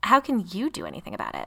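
suspicious, distrustful and doubtful tone. A narrator reads a character questioning someone who offers help, suspicious. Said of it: "Lily asked suspiciously".

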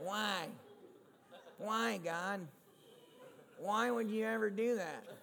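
put-on whining like a baby, whiny voice. Showing how asking God why sounds: whiny voice. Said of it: "Just the word itself sounds like a whine".

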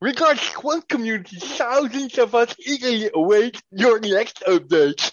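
put-on shrill, booming, very high, very loud voice. Reading a tweet aloud to another speaker, use the Crypto Eugene voice. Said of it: "I read it with the crypto Eugene voice".

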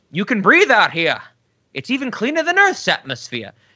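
terrible put-on Scottish accent. Recapping an episode, quoting the scottish medical expert in a terrible scottish accent. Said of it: "that was a terrible Scottish accent on [name]'s end".

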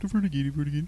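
mock, put-on Swedish-sounding gibberish voice. Asking how others talk, the speaker slips into a Swedish Chef voice. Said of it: "I was doing the Swedish chef".

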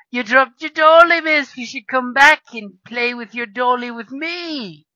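very loud, high, mocking, jeering taunt. Voicing the guy playing with the doll, calling the player back: taunting guy's voice. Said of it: "starts playing with the arms like a little dolly, going".

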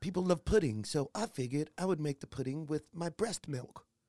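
put-on British woman's accent. Retelling a scene from a show, imitating a lady: put-on British accent. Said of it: "And it's all British accent".

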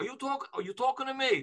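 very high-pitched, stumbling delivery. Doing an impression of a famous actor praying. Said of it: "I'm gonna do my Robert De Niro".

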